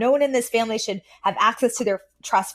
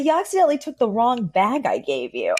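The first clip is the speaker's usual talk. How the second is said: put-on unapologetic, sing-song delivery; 2 semitones higher than usual. Retelling a sitcom scene's line: imitating Fran's unapologetic delivery. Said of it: "the zero accountability in the delivery".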